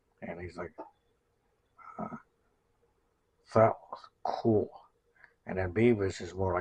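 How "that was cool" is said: raised pitch, slow drawling stoner voice. Acting out Beavis and Butt-Head lines: Butt-Head stoner voice. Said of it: "you have to do almost like a stoner in there".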